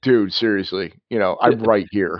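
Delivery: ordinary delivery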